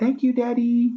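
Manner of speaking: put-on tiny, very high two-year-old toddler voice. A father quotes Briar thanking him, in her little two-year-old voice. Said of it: "in her little two year old voice".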